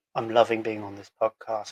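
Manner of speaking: glum, down-sounding, downbeat delivery. Showing how someone excited can still sound down. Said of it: "they still sound like they're down like this".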